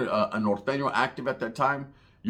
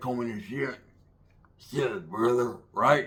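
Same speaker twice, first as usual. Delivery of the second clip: put-on scruffy, ragged, wrecked-throat voice. Recalling a tough guy who would walk by, in a scruffy wrecked-throat voice. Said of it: "just scruffaluffagus ass voice".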